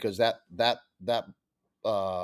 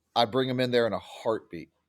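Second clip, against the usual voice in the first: ordinary delivery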